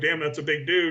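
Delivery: ordinary talk, nothing marked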